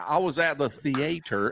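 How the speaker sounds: imitated Louisiana accent. Retelling how Scotty said a word, imitating Scotty's Louisiana accent. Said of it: "his like Louisiana accent".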